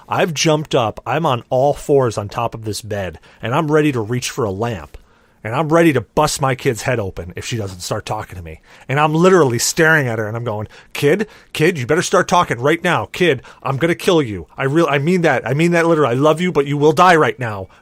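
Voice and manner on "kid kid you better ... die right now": panicked voice, louder. Retelling staring down their kid who won't talk, retelling a panicked threat. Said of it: "I am in full on panic mode".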